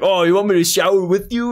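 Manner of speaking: playful, joking put-on voice. Retelling a grandpa joking to a kid, imitating grandpa's joking threat. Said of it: "saying it like as a threat".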